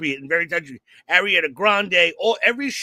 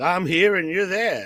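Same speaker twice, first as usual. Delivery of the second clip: deliberate, unhurried, slow, drawn-out delivery. Mimicking another speaker's opening, said to sound like Steve Summers. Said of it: "You sounded like Steve Summers".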